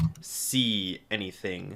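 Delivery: ordinary delivery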